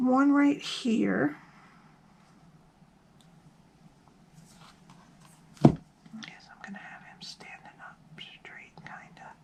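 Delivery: whispered. Explaining a craft step to viewers, whispering. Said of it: "I'm sorry, I'm whispering".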